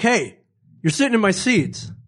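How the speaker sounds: insistent, adamant, sure-he's-right tone. Retelling what a fan said about the seats: imitating an adamant demand. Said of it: "Like, that adamant".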